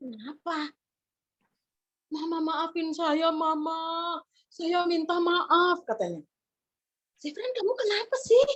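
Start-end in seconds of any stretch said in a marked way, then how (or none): 2.1-5.9 acted child voice, crying and pleading. Telling a story, the speaker voices a child pleading to their mother, imitating a crying child.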